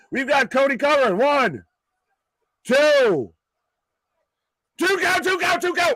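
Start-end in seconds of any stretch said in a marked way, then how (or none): 1.1-5.9 thrilled, excited yelling, high-pitched and swooping. Counting along with a referee's pin, yelling excitedly. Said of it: "I'm yelling and everything and clapping".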